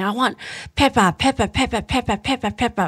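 put-on high, insistent, whiny toddler tantrum voice. Retelling what a two-year-old said during a tantrum: imitating a child's tantrum. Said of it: "he was having a tantrum".

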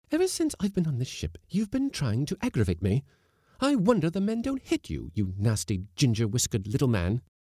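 scornful, furious, high-pitched scolding, quivering with wrath. Reading a story aloud, the narrator voices Mrs. Blossom answering the skipper; furious Mrs. Blossom voice. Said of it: "quivering with wrath. / Cried the lady. / The new cook, / Blossom scornfully".

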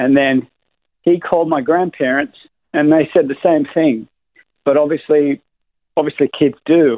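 slightly choked, heartfelt, a little emotional voice. Recalling being told kids don't get cancer, getting a little emotional. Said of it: "I got a little emotional there".

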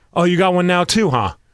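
ordinary delivery

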